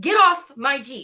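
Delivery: very loud, high, drawn-out yell. Retelling how Judy yelled at something on her Jeep: imitating Judy yelling.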